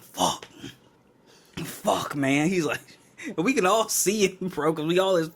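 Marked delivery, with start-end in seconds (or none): 0.0-2.5 mock panicked outburst, swooping, with cursing. Retelling a guy's reaction to hearing he must take a drug test; retelling a guy freaking out. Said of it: "he freaking out".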